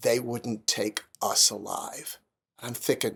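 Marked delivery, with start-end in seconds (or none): 0.0-2.2 mock very serious, low, slow and grave. Retelling what the man beside him said after the checkpoint: imitating a very serious tone. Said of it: "very serious".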